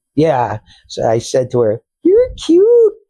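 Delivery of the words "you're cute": very high, loud put-on disguise voice. Retelling a line said to her while disguising the voice, in a high disguised voice. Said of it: "I always talked in a high voice".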